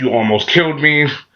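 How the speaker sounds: ordinary delivery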